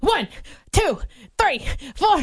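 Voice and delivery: winded, breathless, high-pitched voice. Told to drop and give twenty, counting push-ups, out of breath. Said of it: "I'm out of breath".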